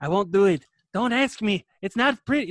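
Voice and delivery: loud, jokey, belted-out comedy routine voice. Describing how someone sounds, the speaker does a Robin Williams Aladdin bit. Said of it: "that's what he sounds like".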